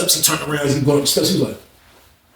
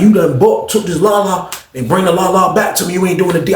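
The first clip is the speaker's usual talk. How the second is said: ordinary delivery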